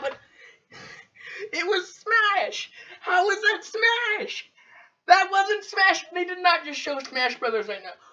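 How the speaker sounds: on the verge of tears. Reacting live as they show Smash Brothers, close to crying. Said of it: "I need to end this before I start crying".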